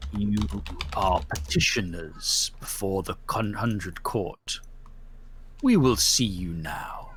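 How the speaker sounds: very low, deep, solemn spirit voice. A narrator voices the masked thing addressing the petitioners, in a booming voice. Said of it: "says in a booming voice".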